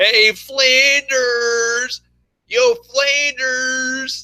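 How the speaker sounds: high, slow, stretched-out taunting call. Imitating Homer making fun of the neighbour: Homer Simpson voice. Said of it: "Homer always makes fun of all the time".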